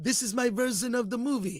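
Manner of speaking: bad, put-on French accent, said softly. Discussing a film and imagining its director: a bad French accent as Denis Villeneuve. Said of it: "That's a terrible French accent".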